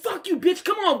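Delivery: very high, taunting yell. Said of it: "I said".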